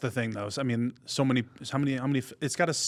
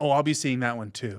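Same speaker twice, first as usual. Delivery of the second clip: usual speaking voice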